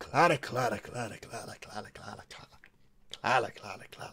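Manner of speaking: daft, deep voice with a Scottish burr. Doing a Doctor impression, calling a name: deep Scottish Doctor voice. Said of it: "It's just making stupid, deep Scottish noises".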